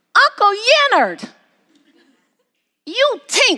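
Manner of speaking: put-on tiny three-year-old voice, very high. Retelling what a small child said on an uncle's lap: little three-year-old voice. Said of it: "in his little three-year-old voice".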